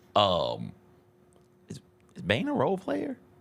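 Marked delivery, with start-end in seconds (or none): 1.7-3.1 very high, breathy, hushed half-whisper. Asking the other speaker a question during a basketball discussion: half-whisper. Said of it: "I ask in a whisper".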